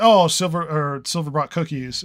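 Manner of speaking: ordinary talk, nothing marked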